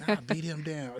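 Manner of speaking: ordinary talk, nothing marked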